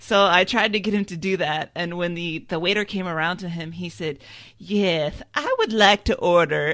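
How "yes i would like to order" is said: loud, swooping, sing-song put-on voice. Retelling a brother ordering at a steak place: Ladies' Man voice. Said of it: "using the ladies' man voice".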